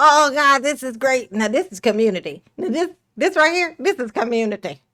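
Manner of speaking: mock blissfully pleased, savoring, delighted voice. Imitating how a man would react at a food gathering: imitating someone being very happy. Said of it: "He'd be so happy".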